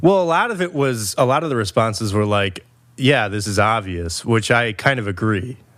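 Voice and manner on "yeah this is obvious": usual speaking voice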